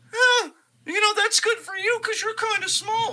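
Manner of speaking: very high-pitched, mocking big-baby voice. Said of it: "Why is your Pat McAfee voice such a high pitch?".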